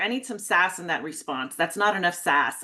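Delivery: ordinary delivery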